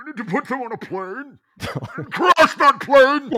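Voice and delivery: very loud, shrill put-on voice, shouted high and hard. Told to do this one in Bane, the speaker does a Bane voice. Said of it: "you got to do this one in Bane".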